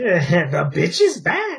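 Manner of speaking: very slow, stretched-out, swooping cartoon voice. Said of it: "You sounded like Grover".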